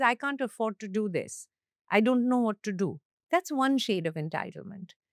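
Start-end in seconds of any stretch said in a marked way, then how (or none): none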